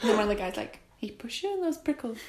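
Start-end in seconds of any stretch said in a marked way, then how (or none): 1.0-2.2 put-on New Zealand accent, pitched up. Retelling what one of the guys said to Ricky, in a New Zealand accent. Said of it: "doing an impression of a New Zealand accent every time I quote".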